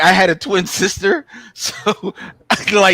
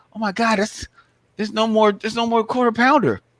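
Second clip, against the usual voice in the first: voice rising suddenly to high pitch; 3 semitones higher, 3 dB quieter than usual. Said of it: "that's a high pitch".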